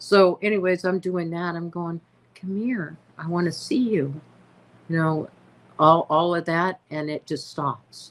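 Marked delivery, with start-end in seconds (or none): 2.3-4.2 calm, soothing, gentle, motherly coaxing voice. Retelling how she coaxed an animal toward her, retelling a calming coaxing voice. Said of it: "my mama voice".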